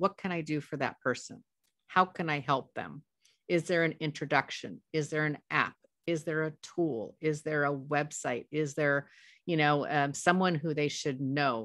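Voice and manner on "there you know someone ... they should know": normal talking voice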